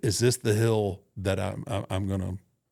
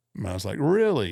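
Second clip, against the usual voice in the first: ordinary delivery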